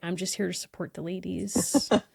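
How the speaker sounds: put-on wholehearted, dead-serious, earnest, sincere tone. Retelling what a man at a concert said, imitating an earnest man. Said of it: "so earnest".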